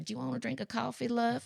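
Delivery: put-on thick, heavy Southern accent, laid on, soft. Describing a viewing game with a friend, quoting their rule: heavy southern accent. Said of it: "we only talk in heavy southern accents".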